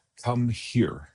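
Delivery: very quiet, hushed, still delivery. Retelling calling the kids over when mad: imitating saying it very quietly. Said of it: "very qui-, quietly say".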